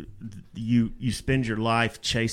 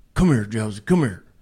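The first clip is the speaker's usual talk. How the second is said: put-on rough-talking old country boy voice, louder; 6 dB louder than usual. Retelling a producer friend's pep talk during a panic attack: rough-talking old country boy voice. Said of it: "he's this rough talking old country boy".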